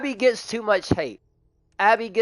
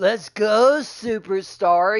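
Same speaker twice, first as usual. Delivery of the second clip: put-on stoned animatronic voice. Explaining why Freddy got on their nerves in that game, the speaker does a stoned Freddy voice. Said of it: "He sounded like an animatronic stoner".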